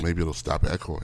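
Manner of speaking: hushed whisper. Suggesting whispering to stop an echo on a Skype call: whispering. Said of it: "If we whisper like this".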